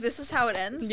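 normal talking voice

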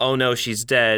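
plain

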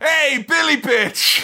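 full-throated, very high-pitched scream. Retelling shouting at a man running toward them, retelling a loud scream. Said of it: "I screamed as loud as I could".

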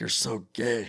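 muttered under breath. Speaker retells what they muttered at a fellow player after getting frustrated. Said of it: "Under my breath".

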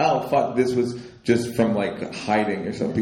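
ordinary talk

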